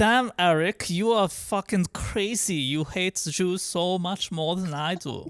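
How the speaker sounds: high put-on German accent. Imagining a South Park episode where he talks to Eric, a Hitler impression with a German accent. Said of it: "I was doing a German accent".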